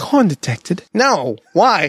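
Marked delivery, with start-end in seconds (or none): 0.0-0.8 seductive, sultry British-accented announcer voice. Making a gag video for a corn detector, the speaker says its line in a sexy British voice. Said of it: "It has to be like some sexy British voice too".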